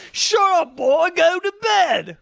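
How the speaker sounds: very high, very slow, drawn-out put-on British accent. Retelling parents scolding a kid in a movie, stereotypical British accent. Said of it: "very stereotypical British".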